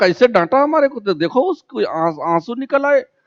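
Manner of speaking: high, fast, indignant, offended outburst.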